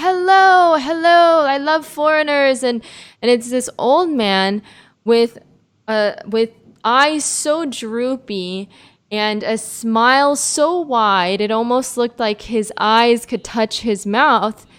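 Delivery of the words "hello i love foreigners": mock loud friendly voice, much higher. Retelling an old man greeting them on a walk, imitating a loud, friendly voice. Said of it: "this loud, friendly voice being like".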